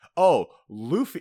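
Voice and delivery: upbeat, high, bright, loud cheerful voice. Recounting a scene with Nami and the crew, imitating Nami's upbeat voice. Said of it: "she has like that upbeat voice".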